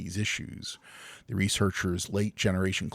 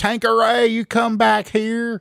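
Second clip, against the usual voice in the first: very loud, very high, shrill rural Southern twang yell; 11 dB louder than usual. Joking that a name sounds redneck, playing a redneck parent yelling. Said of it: "sounds like a hillbilly redneck girl name".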